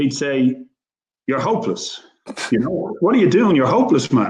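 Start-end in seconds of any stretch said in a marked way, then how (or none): 1.3-4.3 put-on tough, gruff, rough-edged voice. Retelling how the coach scolded players: imitating Jack Charlton, tough and gruff. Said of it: "he'd do it in a really tough, gruff way".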